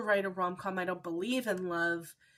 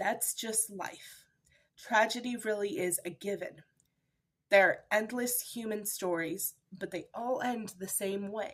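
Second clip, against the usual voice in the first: voice fighting back tears. Reading the final lines of a book aloud, fighting back tears. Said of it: "I'm going to try and do it without crying".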